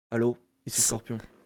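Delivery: deep, mean voice. Showing how he answers the phone as Scorpion: Scorpion voice, deeper and meaner. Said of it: "un peu plus grave et un peu plus méchante".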